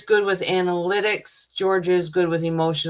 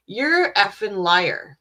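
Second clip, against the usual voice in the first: acted-out indignant yelling, somewhat held back; 3 semitones higher than usual. Recounting watching a woman testify in court, speaker retells yelling at the TV. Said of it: "I was yelling at my T V".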